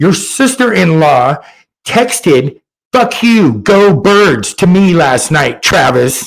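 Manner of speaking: put-on, very slow, drawn-out, word-by-word shout. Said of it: "she's yelling at him".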